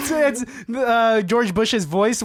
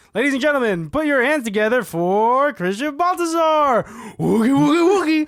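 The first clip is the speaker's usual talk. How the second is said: game-show host announcer, showman style; 3 semitones higher than usual. Recalling how someone introduced him as a game show host, game-show host introduction. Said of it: "introduce me as the host of this game show and be like".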